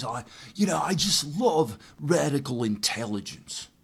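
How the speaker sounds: put-on unhurried, drawn-out British accent. Retelling what a venture capitalist said when they met, imitating Ian's British voice. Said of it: "in this British voice that he has".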